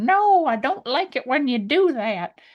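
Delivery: put-on high old lady voice. Acting out a playful line in a character voice, then admitting to slipping into an old lady accent. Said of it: "a little bit of old man".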